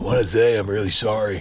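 fake raspy celebrity voice. Voicing covid as a person apologizing: Gary Busey voice. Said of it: "Why does he sound like Gary Busey?".

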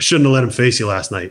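mock dry, flat, emotionless deadpan delivery. Retelling what the manager said at the batting cage: imitating Jim Leyland, deadpan. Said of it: "dead, straight face, no emotion whatsoever".

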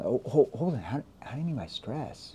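confused tone. Coaching on tone, demonstrating a question asked in a confused tone. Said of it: "when you use that confused tone".

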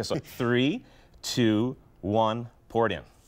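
very slow, drawn-out, deliberate count. Helper counts down again before the liquid is poured, very slow countdown. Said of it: "I'll do it slow this time".

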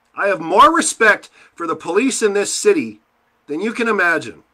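very high, very loud, shrill angry shout. You are hurting and speaking to Edmonton about where things are; sound angry and emotional. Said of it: "so you can tell I'm angry".

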